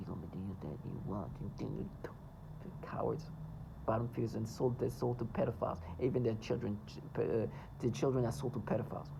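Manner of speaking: low-pitched, soft voice.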